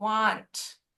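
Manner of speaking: want with a long, stretched vowel. Giving feedback, repeating how someone said it: drawn-out vowel in 'want'. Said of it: "you really elongated the vowel in want".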